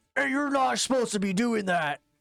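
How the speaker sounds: bugbear monster voice, calling out. Voicing a bugbear who catches the players: bugbear voice. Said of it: "he's just kinda looking up and be like".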